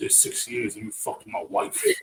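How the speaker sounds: breathy put-on voice. Retelling a scene about owed money: put-on imitation voice. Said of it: "Trying to do his I'm trying to do his voice".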